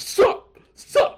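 loud, frantic, freaking-out yell of sup. Describing a movie scene, the speaker acts it out, imitating Nicolas Cage yelling. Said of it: "he just starts yelling".

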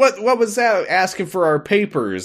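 joking mock grumbling. Retelling a character grumbling jokingly at a guard, a retold joking grumble. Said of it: "grumbles jokingly at Richard the guard".

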